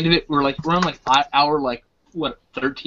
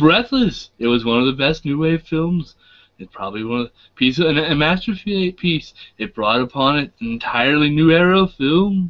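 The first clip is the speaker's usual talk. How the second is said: clear narrator voice, documentary style. Showing how the narrator of The Story of Film talks: imitating the narrator of The Story of Film. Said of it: "he talks like this all the time".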